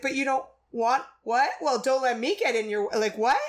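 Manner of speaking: startled, shocked, thrown-off, taken-aback voice. Describing a scene, the speaker acts out a woman's line, imitating a shocked reaction. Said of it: "but she's like".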